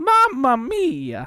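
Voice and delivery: very high-pitched, loud, belted-out exclamation. Doing a video game character impression after a friend asks: Mario impression. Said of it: "Also do Mario".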